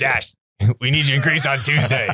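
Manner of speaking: put-on gruff, old-fashioned fifties Hollywood studio voice. Describing a Sunday phone call, imitating a gruff fifties Hollywood guy. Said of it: "like the fifties gruff guys like".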